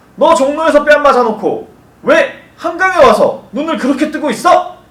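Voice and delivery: high, loud, annoyed and irritated scolding tone. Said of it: "이 속담은 이렇게 이야기해야 돼요".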